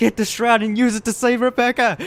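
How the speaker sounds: put-on, very high, urgent screaming. Retelling a reaction to a scene in a game: imitating own screaming. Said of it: "I was screaming, like".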